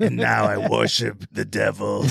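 terrifying evil voice, rough, creaky, menacing croak. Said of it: "That was a terrifying voice".

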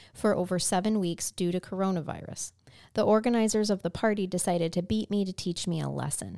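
plain

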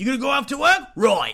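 high, almost Australian accent. Chatting over a meal, slipping into an almost-Australian accent. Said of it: "That's almost Australian".

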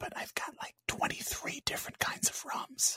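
very quiet, breathy, secretive whisper, barely audible. Confiding something so a wife nearby won't overhear: whispering. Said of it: "I gotta whisper this 'cause my wife might hear me".

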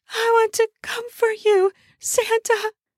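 very high, strained, drawn-out whimper. Narrator reading her own first-person line to Santa, strained voice. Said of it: "I said in a strained voice".

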